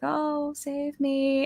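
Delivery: very high, hushed, creepy phantom ghost voice. Giving a horror-movie sound example, in a creepy ghost voice. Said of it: "like a creepy ghost voice".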